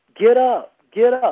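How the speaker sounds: mock boxing coach, high, drawn-out yelling scream. Describing how the listener helps others, like a corner manager: imitating someone screaming. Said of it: "You're screaming from the corner saying".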